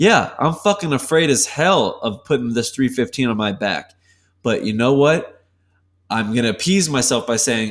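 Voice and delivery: ordinary talk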